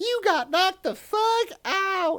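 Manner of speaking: very high, loud, drawn-out exclamation. Quoting what he said to a knocked-out person, in Chris Tucker voice. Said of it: "I gotta say it with his voice. ... I'm probably going too high there".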